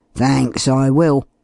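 grunting. Reading a man's reply to an offer of lodging: grunting. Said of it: "grunted Cleek in reply".

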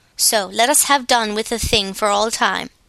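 ordinary delivery

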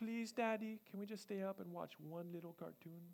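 put-on hushed, trembling, very quiet little voice. Retelling a young daughter's bedtime plea: imitating a quivering pleading voice. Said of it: "Her voice starts quivering".

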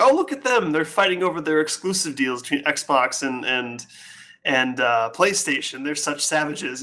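plain

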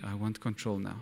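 soft hushed whisper. Recounting what god whispered to him one morning, in a gentle whisper. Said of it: "I felt God whisper to me".

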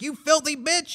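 very high, vicious snarling voice.

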